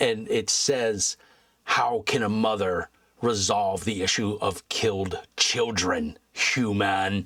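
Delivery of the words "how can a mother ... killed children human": put-on harsh, hardened, cruel voice. Recounting what a voice said to them, the speaker is imitating a harsh, cruel voice. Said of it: "very harsh, sounds very cruel".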